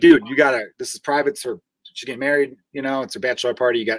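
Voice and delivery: imitated calm, cool tone. Retelling telling a party crasher to leave: retelling own calm, cool tone. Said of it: "and I was being so cool".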